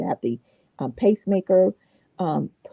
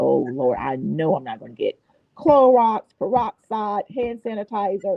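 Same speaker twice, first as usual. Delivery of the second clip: ordinary talk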